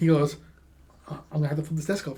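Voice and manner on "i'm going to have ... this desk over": mock mumbling, quieter. Retelling what a student said while staring: imitating a student mumbling. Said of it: "he mumbles while looking at me".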